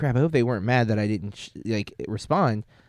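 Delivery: normal talking voice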